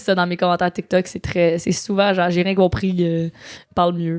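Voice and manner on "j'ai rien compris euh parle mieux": normal talking voice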